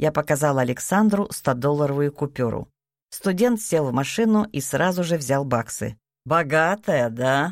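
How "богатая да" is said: smirking tone. A student takes the offered cash and replies, smirking. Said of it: "ухмыльнулся он".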